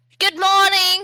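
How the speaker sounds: very high-pitched, loud shout. Narrator voicing a character greeting the sleeping party: Rudy shouting. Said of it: "She shouts out".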